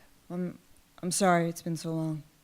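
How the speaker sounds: soft, very quiet, under-the-breath, stumbling delivery. Retelling a reunion at the door, quoting the brother: imitating a quiet voice. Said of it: "he says really quietly".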